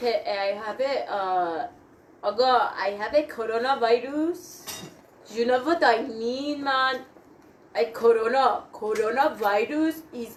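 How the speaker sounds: put-on, played-up Persian-accented English. Joking around with friends, the speaker announces an accent and performs it: put-on Persian accent. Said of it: "I'm gonna do a Persian accent".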